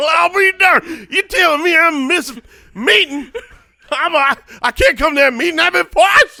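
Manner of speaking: very high, loud working-man voice. Playing the poison man who skips meetings, in a Yosemite Sam voice. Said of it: "Here's a working man's voice".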